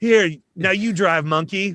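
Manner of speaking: loud, high, super-nice weed-dealer type voice. Quoting the dealer from Grandma's Boy: weed dealer from Grandma's Boy voice. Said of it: "the dude in Grandma's Boy, the weed dealer guy".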